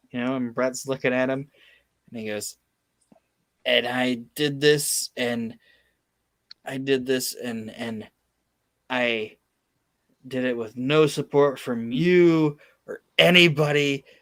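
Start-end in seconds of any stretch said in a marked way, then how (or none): none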